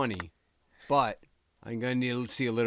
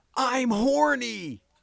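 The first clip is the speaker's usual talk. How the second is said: shrill, high, loud, sudden yell; 14 semitones higher, 7 dB louder than usual. Retelling someone yelling across an open store: imitating someone yelling. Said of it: "I hear someone yell".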